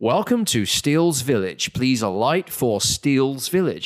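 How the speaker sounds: put-on computerized automated bus stop announcer voice. Retelling a stop announcement on a London bus: imitating a computerized bus announcement. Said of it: "there's a computerized voice that tells you what stop you're at".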